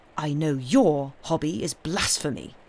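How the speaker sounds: plain reading voice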